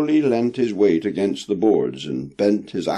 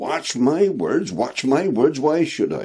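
high, scornful, mocking tone; 5 semitones higher than usual. A young sailor answers a coughing man's warning, retorting. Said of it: "retorted William Button".

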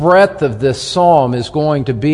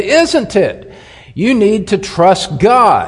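acted, sharp, raised voice, pitched up; 6 semitones higher than usual. Quoting a man's reply in their conversation, retelling a sharp raised voice. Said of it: "he sharpened his voice and he raised his voice".

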